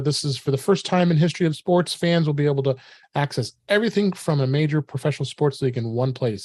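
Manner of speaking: ordinary delivery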